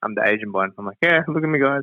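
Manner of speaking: normal talking voice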